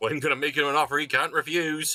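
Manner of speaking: cheerful West Country accent. Showing a dramatic movie line from The Godfather: cheerful West Country accent. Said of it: "saying dramatic movie lines in a West Country accent".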